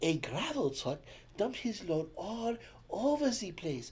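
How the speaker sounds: acted sultry French accent. Retelling a traffic report by a french traffic spy: imitating a sexy french accent. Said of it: "she sounded really French and sexy".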